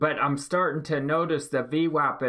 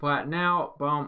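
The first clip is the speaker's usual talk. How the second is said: usual speaking voice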